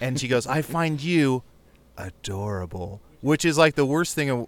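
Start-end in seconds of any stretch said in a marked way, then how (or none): 0.4-3.0 sensual, sultry, very slow, very drawn-out delivery. Retelling what a woman in a VR porn scene says: imitating a sensual voice. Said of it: "the most sensual voice".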